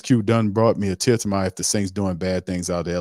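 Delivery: ordinary talk, nothing marked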